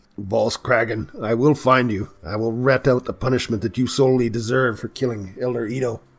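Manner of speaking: shouting at the top of the voice. Voicing a character who yells at an enemy leaving by airship: yelling. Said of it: "I'm gonna yell at him".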